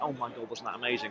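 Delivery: gushing under the breath.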